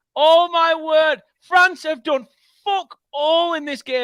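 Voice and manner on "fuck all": heavy, punched stress on the words "fuck all". Reacting to France equalizing in a match, stress on 'fuck all'. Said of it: "I emphasize the word fuck all".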